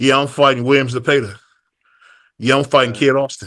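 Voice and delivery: ordinary talk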